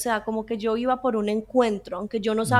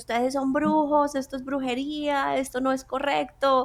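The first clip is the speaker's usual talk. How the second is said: play-acted accusing shouting outburst, half-voiced; 3 semitones higher than usual. Retelling how the mother shouted at the whole church: imitating someone shouting. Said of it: "empezó a gritar a toda la iglesia".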